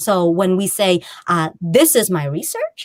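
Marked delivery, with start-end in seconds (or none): 1.6-2.8 research lifted with a question-like rising pitch. Showing how younger women convey information uncertainly, ends rising on research. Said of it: "when I say it like that, it comes off as though I'm, I don't actually know if it's my research".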